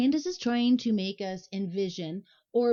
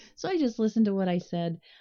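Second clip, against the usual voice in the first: plain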